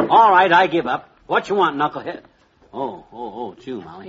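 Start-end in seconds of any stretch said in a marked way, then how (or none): 0.0-2.2 loud yelling at the top of the lungs. Expecting Knucklehead at the door, the character answers Molly, shouting. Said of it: "you can stop shouting now".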